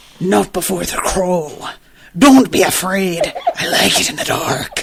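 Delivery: fast pirate voice, laid on thick. Complaining about a character's voice, imitating it in a pirate voice. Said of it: "he does a fucking pirate voice again".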